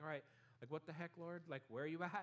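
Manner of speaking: ordinary talk, nothing marked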